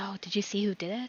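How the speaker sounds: hushed whispers. Narrating bystanders working out what happened, voicing their whispering. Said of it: "You hear a few more like whispers".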